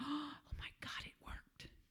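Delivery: little, tiny, very quiet whispery voice. In a story, a woman reacts after a genie grants her wish, in a little tiny voice. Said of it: "you hear this little tiny voice".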